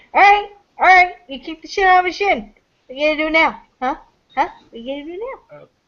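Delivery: high, needling, goading taunt. Voicing a character circling an opponent after a kick, in-character taunt. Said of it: "She's walking around you like".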